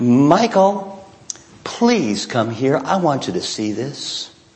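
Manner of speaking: small, slow, sweet little voice. Retelling how she called him down the stairs, in a sweet little voice. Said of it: "That sweet little voice".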